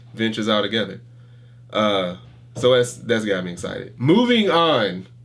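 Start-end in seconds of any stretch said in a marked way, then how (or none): 4.0-5.0 loud, high, raised shout cutting off. Speaker cutting themselves off after talking too long, yelling. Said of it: "Why are you yelling?".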